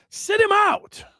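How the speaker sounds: high, loud, barked shout.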